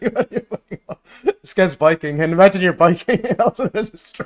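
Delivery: talking through laughter. Describing a man biking into a wire strung across a path, laughing while talking. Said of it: "sorry about, uh, laughing".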